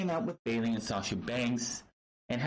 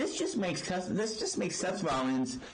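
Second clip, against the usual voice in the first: ordinary talk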